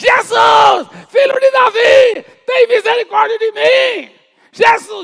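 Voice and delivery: crying out very high, very loud, very slow and drawn-out. Speaker retells the blind man calling out to Jesus, retelling a loud shout. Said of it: "E começou a gritar bem alto".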